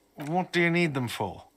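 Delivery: normal talking voice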